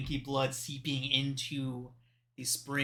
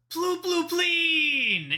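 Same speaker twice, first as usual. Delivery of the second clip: very high, shrill, swooping yell, "pleen" drawn out; 8 dB louder than usual. Voicing a creature greeting a friend: yelling creature greeting. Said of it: "throws out his arms and yells".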